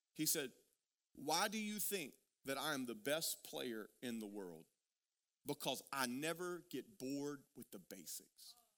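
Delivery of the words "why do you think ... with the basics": low, grave, very serious earnest tone. Retelling a reply to a question about daily basic drills: retelling in a very serious tone. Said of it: "he said in a very serious tone".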